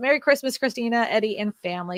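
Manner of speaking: normal talking voice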